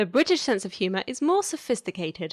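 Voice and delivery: ordinary talk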